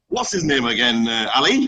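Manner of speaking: plain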